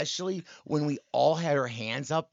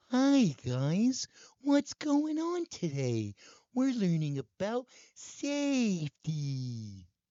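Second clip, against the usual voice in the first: put-on lifted high, kids'-show puppet style; 6 semitones higher than usual. Showing off a character voice they liked doing, Big Bird voice. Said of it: "That's a good Big Bird".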